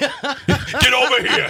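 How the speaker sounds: very high, faint, light New York accent. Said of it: "What is this accent?".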